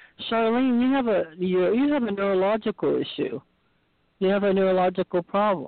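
mock, very calm, knowing, knowledgeable tone. Retelling words heard in sleep: imitating a calm, knowledgeable voice. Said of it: "heard myself talk very calmly, you know, in another very knowledgeable voice".

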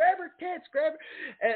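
very high, shrill, drawn-out scream. Recounting a man screaming at the camera in behind-the-scenes footage, retelling a scream. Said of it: "he's like screaming at the camera".

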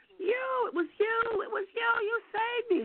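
mock shrill screaming, very high-pitched. Retelling how a woman in an office recognized her: imitating a woman screaming. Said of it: "she started screaming".

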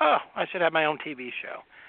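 heavily sarcastic, tongue-in-cheek, swooping sing-song delivery. Retelling own past reply to people's comments: imitating own past sarcasm. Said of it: "And in sarcasm, I would say".

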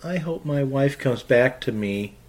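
put-on feeble, soft namby-pamby voice. Recounting a line a book character says, in a mocking mamby-pamby voice. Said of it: "in a mamby-pamby voice".

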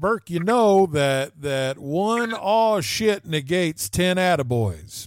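loud, high, put-on Eastern Kentucky accent. Quote what the production company owner has told you many times, in his Eastern Kentucky accent. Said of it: "he says in his Eastern Kentucky accent".

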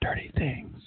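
said really softly. Demonstrating a marriage tip, leaning in close to her ear: said really softly. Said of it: "really softly say".

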